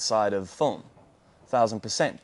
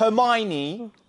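very high, put-on British accent voice; 11 semitones higher than usual. Trying out an accent, the speaker says 'hermione' in a british accent. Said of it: "I'm nailing this accent".

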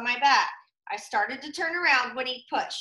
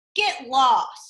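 loud, sneering, dismissive tone; 5 dB louder than usual. Reading a character telling another to get lost, sneering. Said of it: "Sammy sneered at him".

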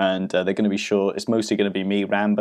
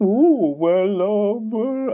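very high, very slow put-on old lady voice; 12 semitones higher than usual. Imagining a supermarket shopper's answer about handstands, in an old lady voice. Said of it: "That's my old lady voice".

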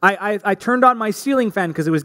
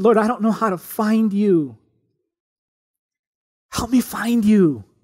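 put-on tearful crying voice, slower. Recounting a desperate past prayer to god, retelling a tearful prayer. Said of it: "I was crying when I said this".

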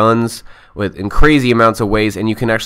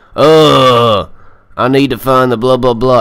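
put-on macho Texan accent, drawn-out "ugh"; 3 semitones higher, 4 dB louder than usual. Reviewing a game, mocking how the heroine shouldn't sound, butch Texan Lara Croft voice. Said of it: "I don't know why I gave it that accent".

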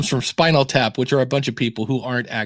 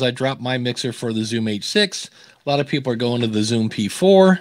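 ordinary delivery

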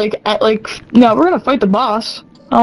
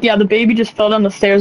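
plain

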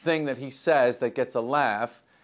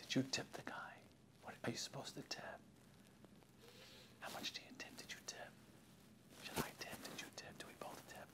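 furtive, hushed, secretive whisper; 26 dB quieter than usual. Imitating people asking about tipping: imitating people whispering. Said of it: "they whisper it, like it's illegal".

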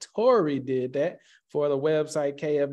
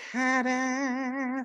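high-pitched cartoon voice, "ta-da" stretched out long; 9 semitones higher than usual. Revealing a page he can rank and make money from: Peter Griffin voice. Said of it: "In my Peter Griffin voice".

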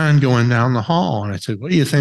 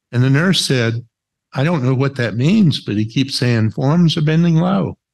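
ordinary delivery

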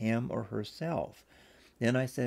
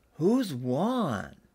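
blurted out all at once; 4 semitones higher, 5 dB louder than usual. The kids and Grandma all answer the narrator together: blurted out. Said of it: "they all blurted out, all at once".

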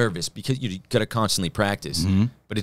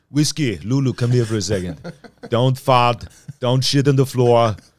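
put-on Austrian accent voice, louder; 6 dB louder than usual. Describing doing a voice while improvising: Arnold Schwarzenegger impression. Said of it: "I see him going".

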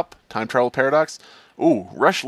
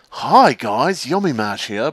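slow, drawn-out, cool drawl. Showing a Yami Mash impression after asking if it's liked. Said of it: "Do you like my Yami Mash impression".

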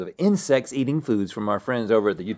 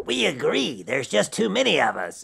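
creaky put-on insect voice; 4 semitones higher than usual. Imagining a slogan for bugs, the host says it in a universal bug voice. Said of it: "that's the voice that they would use".

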